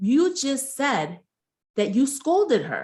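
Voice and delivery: slow, pointed delivery.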